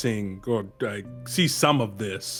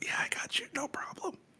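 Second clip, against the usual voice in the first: whisper, much higher pitch, quieter; 11 dB quieter than usual. Player's voice comes through a raven's mouth to a teammate: whispering through a raven. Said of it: "I whisper through the raven".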